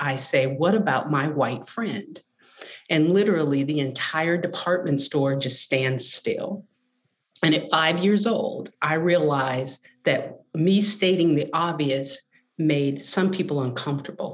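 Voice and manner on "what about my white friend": normal talking voice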